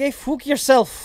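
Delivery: put-on Scottish accent. A normally well-spoken speaker curses at someone, Scottish accent. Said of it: "break out my Scottish accent".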